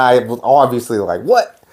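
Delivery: ordinary talk, nothing marked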